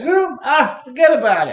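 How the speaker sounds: offhand seen-it-all brush-off. Retelling how David answered the question about Zoom: imitating David's offhand dismissal. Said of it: "Like he'd done it a thousand times".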